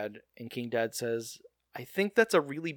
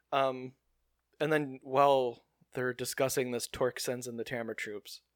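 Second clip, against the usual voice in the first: normal talking voice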